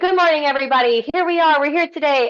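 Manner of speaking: high, loud, projected front-of-classroom teacher voice. Show your initial gut reaction to speaking, greeting everybody in your projecting teacher voice. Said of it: "like my teacher voice".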